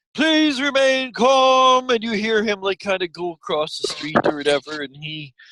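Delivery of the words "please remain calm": very high town-crier shout, calm and stretched. Acting out a town crier's announcement, imitating a town crier shouting. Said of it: "and it's even louder".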